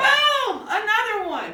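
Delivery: very high, thrilled, excited burst. Teaching exclamation points versus periods: excited. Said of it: "when I say it with excitement".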